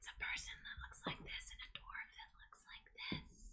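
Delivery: hushed, secretive whisper. Playing a character who leans in to ask for a secret job, whisper. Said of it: "she leans in and whispers".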